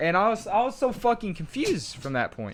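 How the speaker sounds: ordinary talk, nothing marked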